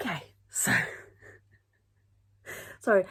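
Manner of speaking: laughing and chuckling while talking. Recording a video, apologizing while laughing at their own habit. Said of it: "I'm laughing because".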